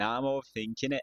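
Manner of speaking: poor put-on Scottish accent. Speaker trying out accents, starting with a bad Scottish accent. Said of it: "we're starting off with a Scottish accent".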